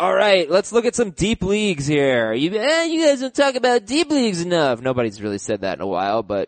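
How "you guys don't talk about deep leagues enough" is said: high, goofy, silly put-on comedic voice. Talking about deep leagues: funny put-on voice. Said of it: "I wanted to do a funny voice, so I did".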